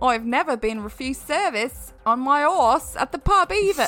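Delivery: bad put-on Australian accent. Asked by a co-host to do the accent, in a bad Australian accent. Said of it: "that's that's from the UK".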